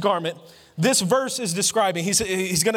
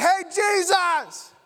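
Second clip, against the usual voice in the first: pitched-up scream with "Jesus" drawn out; 9 semitones higher than usual. Putting themselves in the woman's shoes, the speaker calls out to jesus, mock screaming. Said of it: "I'm screaming".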